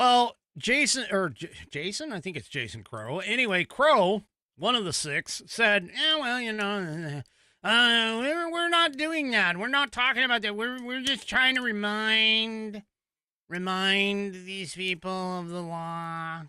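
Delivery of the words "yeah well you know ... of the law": put-on nasal, whiny voice. Quoting Jason Crow, one of the six, in a mock-whiny nasal voice. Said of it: "I sound nasally not because of an impression".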